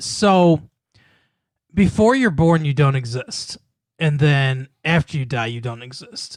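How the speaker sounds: ordinary talk, nothing marked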